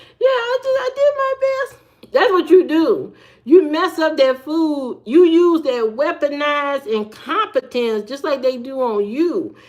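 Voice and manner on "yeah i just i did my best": very high, put-on teary sobbing. Acting out saying you did your best over the raw chicken: mock crying. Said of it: "And that's when you start crying".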